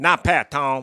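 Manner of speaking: put-on loud, belted-out West Virginia accent. Retelling a pickup game quote in a Jason Williams West Virginia accent. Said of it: "he had the best West Virginia accent".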